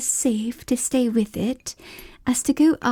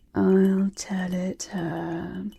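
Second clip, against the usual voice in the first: deep, hollow tone; 3 semitones lower than usual. Narrator voicing the Mock Turtle, asked by the Gryphon for its history: Mock Turtle's deep hollow tone. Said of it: "said the Mock Turtle in a deep, hollow tone".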